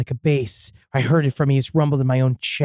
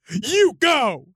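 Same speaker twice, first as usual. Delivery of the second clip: high-pitched yelling. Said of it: "and I yelled at it".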